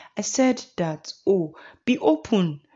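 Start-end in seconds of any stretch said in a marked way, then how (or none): none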